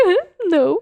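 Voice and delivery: high, light, breezy, dismissive. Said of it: "And I was like".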